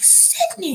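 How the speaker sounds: play-acted, very high, shocked and scandalized cry. Retelling a character's reaction: imitating a scandalized exclamation. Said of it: "He's scandalized".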